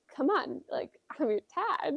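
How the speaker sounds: mock, mildly incredulous, slightly disbelieving pleading tone. Retelling a scene where a father reveals himself to his son: acting a little incredulous. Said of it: "he kind of acts a little incredulous".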